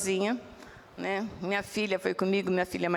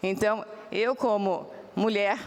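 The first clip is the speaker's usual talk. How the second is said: normal talking voice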